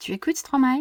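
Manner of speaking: rising tune at the end of Stromae. Teaching how to ask a french question without 'do', rising question intonation. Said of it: "make my voice go up at the end".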